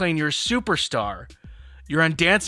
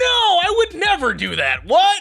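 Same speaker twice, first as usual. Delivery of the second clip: very high, loud, over-the-top defensive tone; 5 dB louder than usual. Acting out a liar making a big production: overly defensive liar denial. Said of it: "they're trying to make a big production about it".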